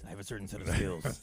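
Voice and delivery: acted rough, gravelly voice. Imagining the priest's reply: gravelly Liam Neeson voice. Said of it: "in that gravelly voice".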